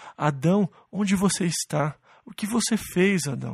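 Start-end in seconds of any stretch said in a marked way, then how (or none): 0.2-2.0 grieving, sorrowful, heartbroken crying out. Voicing a father calling out to Adam, acting a heartbroken father. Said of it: "Eu ouço o choro de um pai com o coração partido".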